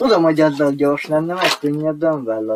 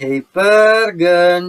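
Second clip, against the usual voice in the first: loud rallying shout, pörgönc drawn out; 4 semitones higher, 6 dB louder than usual. Shouting a call together with another speaker, as just announced: shouting. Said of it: "Úgyhogy ordítsuk együtt".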